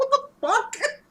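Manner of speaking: high, incredulous outburst. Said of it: "I'm like".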